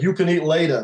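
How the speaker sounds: put-on heavy New York accent, laid on thick. Retelling being shoved out of a restaurant, quoting the guy, thick New York accent. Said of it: "with this thick New York accent".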